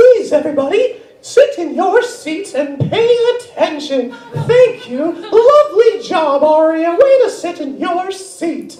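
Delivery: very high squeaky voice. Getting a restless class to sit and pay attention, in a Mickey Mouse voice. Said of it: "I'll just bust out Mickey Mouse".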